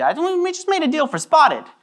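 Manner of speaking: high, whiny voice with swooping pitch.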